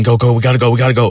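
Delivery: mock toned-down yell, half-voiced, like a scream. Retelling a friend urging escape as parents arrive: imitating someone screaming. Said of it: "he's screaming".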